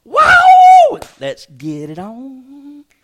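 high, loud, amazed shout, then slowing down.

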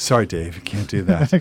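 loud, cold, mechanical computer-like robotic voice.

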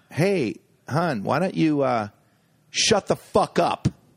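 mock-angry outburst. A comedian retells snapping at a heckler in the front row, retelling an angry outburst. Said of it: "Like really angry".

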